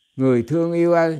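high, loud, joyful calling out.

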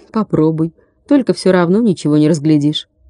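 ordinary talk

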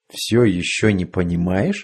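ordinary delivery, nothing marked

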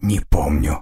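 quiet, soft-spoken. Asked his name, a former slave finally answers, quietly. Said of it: "Наконец он тихо произнес".

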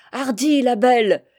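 loud, bellowed shout, hurled out. Loull-Vraz yells as the Marie-Jeanne gets under way: shouting. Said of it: "hurlait Loull-Vraz".

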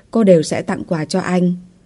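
ordinary delivery

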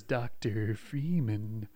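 put-on voice, sounding creepy. A man in a suit with a creepy voice speaks, G-Man voice. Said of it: "a really creepy voice who says, ... It's not my best G-Man".

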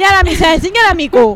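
high, loud, shocked and alarmed outcry.

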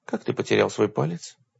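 ordinary delivery

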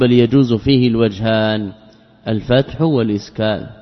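plain

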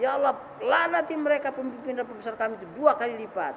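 usual speaking voice

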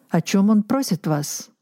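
ordinary delivery, nothing marked

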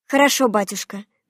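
usual speaking voice

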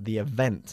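event with stress on second syllable, -vent. Teacher repeats the phrase for a learner: stress on second syllable of event. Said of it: "enfatizando la segunda sílaba".

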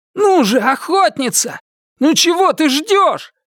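urgent, shrill shout, pitched very high. Richard calls to the huntress as Door's hands are tied, shouting. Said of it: "Ричард крикнул".

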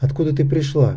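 ordinary delivery

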